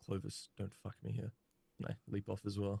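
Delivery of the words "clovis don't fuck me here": whispering quietly. Acting out a character leaping off a building: whispering to oneself. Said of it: "just whisper to myself".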